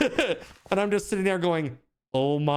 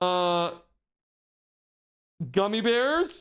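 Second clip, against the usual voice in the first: put-on caught-out, mortified tone, halting; 3 semitones higher than usual. Retelling a classmate answering the teacher: imitating a mortified friend. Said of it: "He's absolutely mortified".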